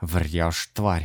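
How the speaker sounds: furious, angry hissing. Dima answers Rey while chasing him around a car, hissed angrily. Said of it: "зло прошипел Дима".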